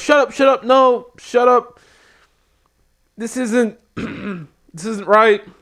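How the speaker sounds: put-on, high, drawn-out yelling. Retelling a wrestler yelling at a booing crowd: retelling yelling at a crowd. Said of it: "He's yelling at the crowd".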